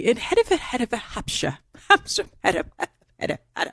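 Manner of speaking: whispered, breathy speech. Riffing on how a phrase sounds, doing a My Fair Lady elocution drill. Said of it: "it sounds like My Fair Lady".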